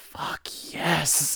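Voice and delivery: hushed, breathy whisper under the breath. Speaker retells a man watching a woman undress, whispering to himself. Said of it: "he whispers to himself".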